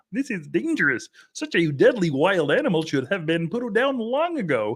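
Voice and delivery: cartoon frog puppet voice. Reading the news, quote a terrified Senator Chuck Schumer under his desk in a Kermit the Frog voice. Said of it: "a Kermit the Frog voice for Chuck Schumer here".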